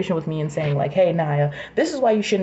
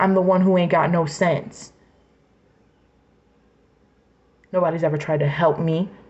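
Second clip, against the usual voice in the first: furious, heated, angry rant. A speaker venting frustration aloud, in an angry rant. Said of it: "I'm fucking pissed off".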